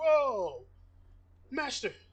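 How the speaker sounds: very loud, high, alarmed, worried outcry. Voicing the butler Jeffrey reacting to a heavy clang: worried butler's cry.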